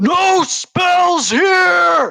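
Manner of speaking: very high, resonating, echoing roar. Mahadi bursts out of his tent at the players: Mahadi roaring, resonating voice. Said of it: "in just a echoing, resonating voice".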